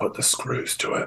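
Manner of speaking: quiet whispered aside. Whispering an order to the barbarian while in character: whisper. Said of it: "I kind of whisper to".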